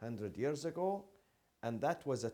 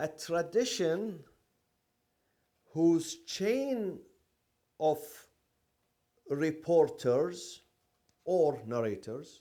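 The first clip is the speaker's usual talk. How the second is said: very slow, loud, spelled-out delivery. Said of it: "I'm going to say it very slowly".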